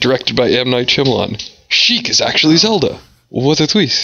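put-on plain American voice with no accent. Joking about a twist in a Zelda show: M. Night Shyamalan impression. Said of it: "Was that your impression of M. Night Shyamalan?".

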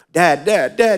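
mock tearful, high, crying little girl voice. A father retells his daughter running in, imitating a crying child. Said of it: "She's crying".

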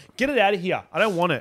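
snapping, hostile, high, aggressive outburst. Reacting to pen marks on the face from the other speaker's pen: aggressive outburst. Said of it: "that was really aggressive of me".

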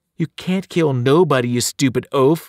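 mocking, jeering taunt. Annabeth answers the howling Polymephus, taunting. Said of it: "she taunted".

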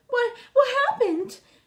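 gasping. The little girl mouse opens her eyes after the furnace explodes, gasping. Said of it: "Gasped the little girl mouse".

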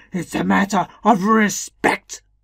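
booming, loud, regal declaiming voice. Narrator voices the infuriated king complaining that a farmer skips his gatherings, booming. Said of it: "he boomed out".

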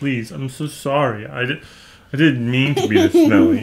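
put-on heartbroken, sorry-sounding voice. Voicing the smelly pet apologizing: voicing Max, mock heartbroken. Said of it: "He's just, like, heartbroken".

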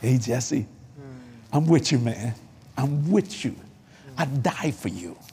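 low voice full of love. Describing the voices of God, voicing Jesus: imitating Jesus' loving voice. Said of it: "It is a voice of love".

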